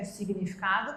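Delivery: plain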